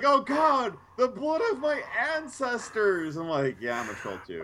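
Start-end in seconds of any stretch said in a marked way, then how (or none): 0.0-3.2 very high, slow, drawn-out terrified yell. Telling about a game, acting out the fleeing trolls: retelling a yell. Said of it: "and they yell".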